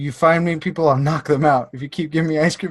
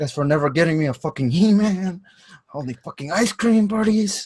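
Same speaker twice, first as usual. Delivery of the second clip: mock whisper, higher pitch; 4 semitones higher than usual. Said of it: "just whispering".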